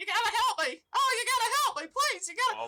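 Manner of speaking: very high-pitched, loud, pleading, begging voice. A narrator voices someone the players hear as they get closer: higher-pitched voice. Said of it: "It's a little bit of a higher pitched voice".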